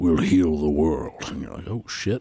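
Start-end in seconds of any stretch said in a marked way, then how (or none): 0.0-1.2 deep monster voice, dropped low. Recounting a scene to another speaker, Venom voice. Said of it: "in the Venom voice".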